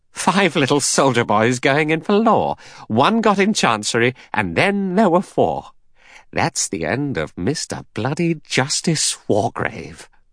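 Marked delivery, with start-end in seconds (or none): 0.2-5.7 high, unnatural laughing delivery. Reading a man's line right after his sudden laugh: high, unnatural laughing voice. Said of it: "a high, unnatural laugh".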